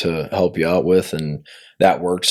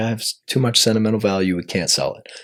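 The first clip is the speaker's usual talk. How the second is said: acted-out weepy, tearful, pleading crying voice; 4 semitones higher, 3 dB quieter than usual. Retelling how a mother called about selling the building: imitating someone crying. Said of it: "my mom calls me and she's, like, crying".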